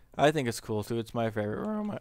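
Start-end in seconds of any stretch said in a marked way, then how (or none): 1.0-2.0 voice cracking and breaking. Showing the favorite room of their castle, voice cracking. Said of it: "voice crack right there".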